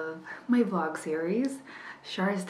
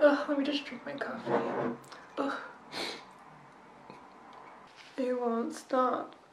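teary speech through crying, pitched up; 6 semitones higher, 4 dB quieter than usual. A vlogger talking to her viewers, crying while talking. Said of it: "The water works".

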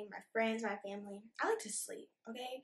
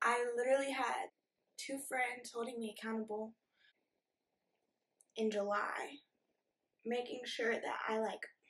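voice catching, choking up near tears. A youtuber talking about days they wanted to quit, choking up, about to cry. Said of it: "why are they crying? Give me a minute".

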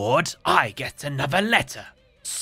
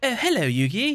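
put-on light, pitched-up British accent; 9 semitones higher than usual. Voicing Bakura greeting Yugi, in a Bakura voice with a British accent. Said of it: "He's British".

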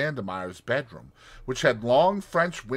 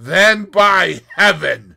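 savage, very loud, raised snarl; 6 semitones higher, 13 dB louder than usual. Narrator reading the Russian's answer to a woman's refusal, snarled. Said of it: "snarled the Russian".

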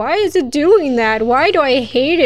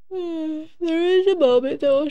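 speaking through a yawn, much higher pitch; 3 semitones higher, 5 dB quieter than usual. Playing Silent Hill and commenting aloud, speaking through a yawn. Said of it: "Sorry, I'm yawning".

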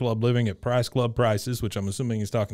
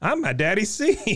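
very high, slow, drawn-out character voice, sounding proud; 11 semitones higher than usual. Retelling a scene, saying Bobby's line in Bobby Hill's voice. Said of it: "in Bobby fashion".

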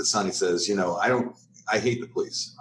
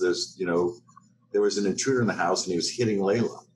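usual speaking voice

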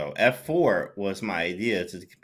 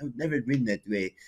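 put-on Russian accent; 3 semitones higher, 3 dB quieter than usual. Retelling what a man told him: Russian accent. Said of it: "he was saying in a Russian accent too as well".

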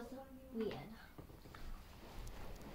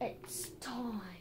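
much softer spooky whisper.

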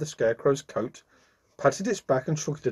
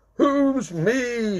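very high-pitched, loud shouting; 9 semitones higher than usual. Santa Claus, hearing the Scarecrow in the dark, shouts back. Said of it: "shouted Santa Claus".

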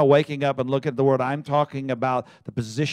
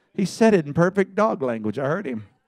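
ordinary talk, nothing marked

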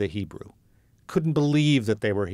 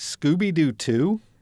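put-on, high, incredulous, disbelieving tone; 6 semitones higher than usual. Recalling answering a job offer on the phone: retelling an incredulous reply. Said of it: "I responded on the phone incredulously".

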